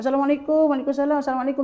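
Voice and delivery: high, loud, bright, cheerful friendly voice.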